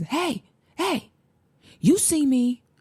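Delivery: acted, very high, very slow, drawn-out scream. Retelling a coworker confronting a man in a break room: imitating someone screaming. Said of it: "she screams".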